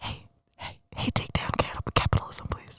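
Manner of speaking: soft close-up whisper. Playing a snake advisor in someone's ear: whispering into the ear. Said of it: "You're so A S M R today".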